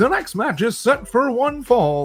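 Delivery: very high, slow wrestling game announcer voice. A voice actor demonstrates his line from the start of a game: wrestling game announcer voice. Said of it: "hear the announcer".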